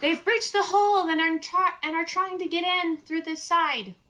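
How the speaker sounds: very high, loud yell. Warning in character that enemies breached the hole: yelling loudly. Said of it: "I'm gonna yell".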